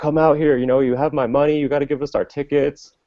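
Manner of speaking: put-on high loud shout. Retelling how their manager shouted for a man to come out, imitating the manager yelling. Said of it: "So my manager just yells".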